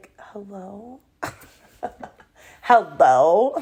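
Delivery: put-on just-woke-up voice. Mom retelling being woken by a call at night, imitating her own sleepy voice. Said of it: "Woke up".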